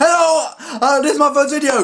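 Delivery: loud, high-pitched voice. Imitating own past self greeting viewers: imitating own loud past voice. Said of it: "I just sound really loud".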